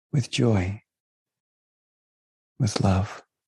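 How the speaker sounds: soft, gentle whisper. Leading an affirmation said out loud along with listeners: soft whisper. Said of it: "just in a soft whisper".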